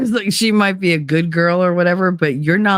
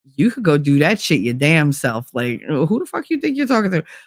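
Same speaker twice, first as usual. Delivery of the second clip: play-acted offended, affronted, indignant tone. Retelling how women answer a man's attitude: imitating an affronted retort. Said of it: "We get all, like, affronted".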